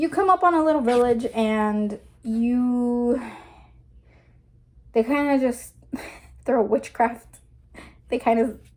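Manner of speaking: laughing through words, drawn-out "you". Recounting a vision of a past lifetime to a listener, laughing while talking. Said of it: "I'm laughing".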